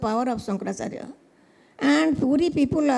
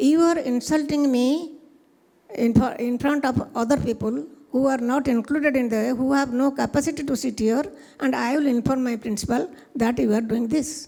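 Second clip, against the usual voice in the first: normal talking voice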